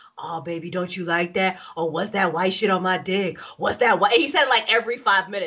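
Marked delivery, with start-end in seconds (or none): 0.2-4.1 mock porn dirty-talk voice, lower. Retelling a porn scene, imitating a porn actor's dirty talk. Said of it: "he just kept being like".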